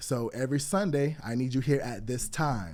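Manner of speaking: usual speaking voice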